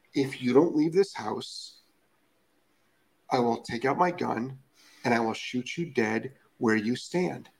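gentle, hushed delivery. Showing a threat that intimidates without raising the voice, soft loving voice. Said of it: "with a soft, loving voice".

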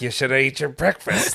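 restrained anger, spoken through clenched jaw and teeth. Recounting a film's car scene where Danny says he's hungry, retelling a line through gritted teeth. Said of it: "Through gritted teeth".

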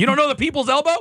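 very high, all-out yelling. Asking the others about a wrestling move, yelling. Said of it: "You're yelling at us".

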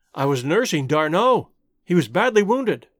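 plain reading voice

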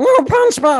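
very high, squeaky alien creature voice. Explaining that Stitch is Gollum pitched a little higher, doing a Stitch voice. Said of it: "Just pitch Gollum a little bit higher".

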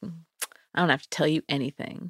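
mock cold, unbothered, stone-cold tough-guy delivery. Retelling a suspect's reply to police questioning: imitating a stone cold tough guy. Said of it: "Stone cold".

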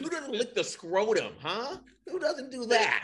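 high, slow, very proper-sounding voice.

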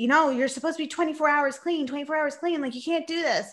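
put-on dad voice yelling. Retelling what the dad said to the mom: imitating someone yelling. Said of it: "yelling at her saying".

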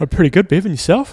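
speaking through a yawn. A podcast co-host, greeted at the start of an episode, replies, yawning. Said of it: "you're yawning".

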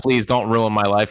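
mock pleading, begging tone. Quoting an old work password about the Phillies: imitating pleading. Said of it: "it was, like, pleading".

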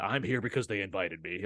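bored, can't-be-bothered, disinterested tone. Mocking a presenter coming out to present Best Picture: imitating a disinterested Harrison Ford. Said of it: "he's just so disinterested".

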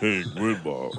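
put-on low voice. Imitating how a tv actor always greeted his grandmother: imitating a low voice. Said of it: "With his low-ass voice".

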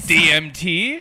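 loud, high-pitched, fake Italian accent. Retelling being offered escalating drugs in Colombia, in an offensive put-on accent. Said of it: "That's such an offensive accent you're using".

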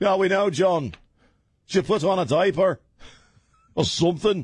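put-on Scottish accent at a very high pitch. Mocking a naked photo of a famous couple: scottish accent. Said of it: "downshifted into a Scottish accent there".

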